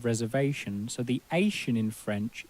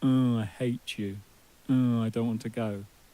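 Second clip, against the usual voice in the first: put-on sulky teenager voice, slower. Teaching french pronunciation, sulky teenager voice. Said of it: "sulky teenager".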